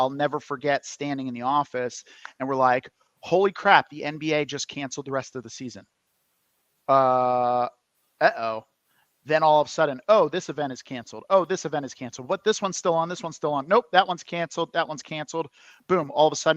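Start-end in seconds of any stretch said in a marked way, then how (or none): none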